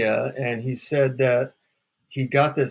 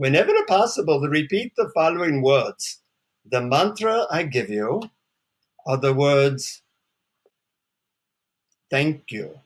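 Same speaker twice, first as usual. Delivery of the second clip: put-on deep male voice with Indian accent. Retelling how a man leaned in to give you your mantra, speak in his deep Indian accent. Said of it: "he says in his deep Indian accent".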